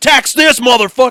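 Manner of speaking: shrill, very loud, very high war cry. Acting out a giant charging through the woods: imitating someone screaming.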